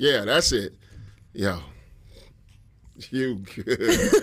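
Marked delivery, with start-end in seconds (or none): 1.3-4.1 soft, flirtatious, playful delivery. After someone tries the phrase several ways, showing it said flirty. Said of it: "it was like".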